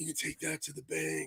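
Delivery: breathy, hushed, soft murmur. Doing an impression for the other speaker: Steven Seagal breathy voice. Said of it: "he has that real breathy voice that he does".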